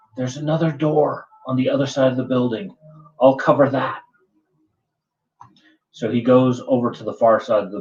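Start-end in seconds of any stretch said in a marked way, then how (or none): 0.2-4.0 stage whisper, kept from carrying. Voicing a rooftop character telling the party about another door: stage whisper. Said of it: "in a stage whisper".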